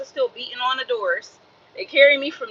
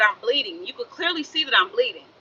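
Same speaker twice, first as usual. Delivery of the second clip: usual speaking voice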